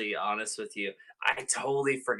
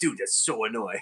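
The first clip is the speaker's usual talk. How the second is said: irritated, fed-up, very annoyed griping; 3 dB quieter than usual. Retelling how a brother reacted during PlayStation mic checks: imitating someone super mad. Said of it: "would always get super mad about that".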